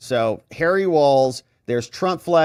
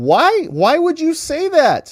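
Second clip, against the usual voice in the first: high, loud, incredulous cop voice. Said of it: "Even the cop's like".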